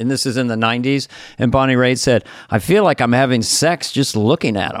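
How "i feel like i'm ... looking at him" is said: normal talking voice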